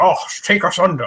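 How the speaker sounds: put-on over-the-top, thick, broad Scottish accent, high-pitched. Retelling a movie scene, voicing the Soviet sub commander in a thick Scottish accent. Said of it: "crazy Scottish thick accent".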